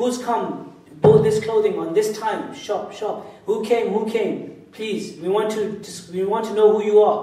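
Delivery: ordinary talk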